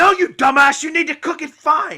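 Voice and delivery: very loud, shrill yelling tirade. Asking how the other speaker learned in culinary school: Gordon Ramsay impression. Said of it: "you could be like Gordon Ramsay".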